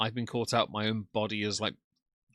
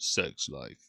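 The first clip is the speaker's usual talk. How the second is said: very low, strange, warped, deep meme voice; 8 semitones lower than usual. Retelling how a meme changed the other speaker's voice: imitating a deep, weird voice. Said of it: "in a really, like, deep, weird voice".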